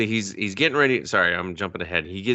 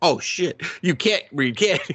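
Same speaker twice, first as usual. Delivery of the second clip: mock panicky, higher-pitched blurted outburst; 9 semitones higher than usual. Retelling a door-to-door scene, speaker imitates a man who starts to panic. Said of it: "he starts to panic".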